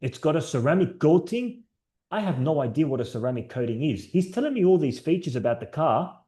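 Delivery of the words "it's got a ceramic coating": put-on speaking with a German accent. Recalling riding in a car with Dean, the speaker is imitating Dean's German accent. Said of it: "He said it in his German accent".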